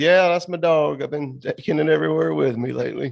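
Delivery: nonchalant, tossed off like nothing. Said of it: "he just nonchalantly goes".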